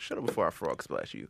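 mock muttering under breath. Retelling what a man said to a woman on the couch, under his breath. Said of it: "just under his breath".

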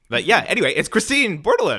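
voice cracking high, breaking partway through. Introducing Christine Bordelon on a call, voice cracking. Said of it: "my voice cracked on that".

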